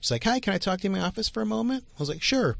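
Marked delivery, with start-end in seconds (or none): 0.2-1.8 put-on, pitched-up woman's voice. Retelling what a woman from the theater asked, imitating a woman's voice. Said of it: "And I'm doing her voice".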